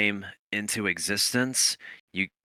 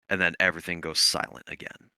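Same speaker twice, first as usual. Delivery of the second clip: ordinary talk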